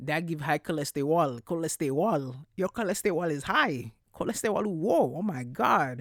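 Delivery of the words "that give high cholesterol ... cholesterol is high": Haitian-accented English, spoken with raised voice. Talking about cheese and high cholesterol, switching into a Haitian accent. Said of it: "Not me about to say it with a Haitian accent".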